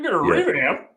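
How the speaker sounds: very high, loud put-on boomer voice. Showing how the line should be said: boomer voice. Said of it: "you gotta say it in the boomer voice".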